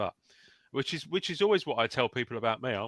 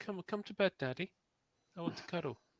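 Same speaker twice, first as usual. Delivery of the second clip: put-on cat voice, higher and quieter; 7 semitones higher, 7 dB quieter than usual. Voicing another speaker's cat that looks at him: speaking as the cat. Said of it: "I'm going to be the voice of your cat".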